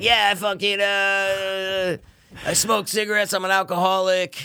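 very slow, raspy comedian voice, stretched-out "uh". Describing a comedian who often comes on the show: imitating Doug Stanhope's raspy voice. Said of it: "The, the comedian's like".

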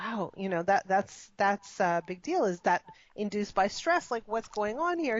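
ordinary delivery

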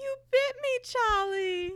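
very high, squeaky, pushed-up voice. Quoting a famous video after a retold line: Charlie bit me video voice. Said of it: "like that video".

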